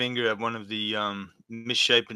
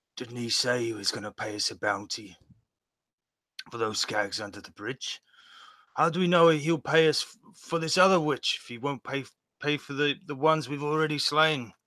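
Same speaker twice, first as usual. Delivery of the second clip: stage whisper, loud; 3 semitones higher than usual. Fishbone leans into a companion: Fishbone's loud stage whisper. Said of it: "whisper that a whisper that everyone can hear".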